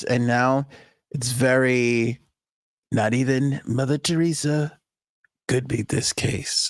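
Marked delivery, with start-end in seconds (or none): 2.9-6.7 soft-spoken breathy half-whisper, stretching very. Showing how President Trump has sounded recently, do a soft-spoken, breathy Trump impression. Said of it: "We had a lot of yelling Trump".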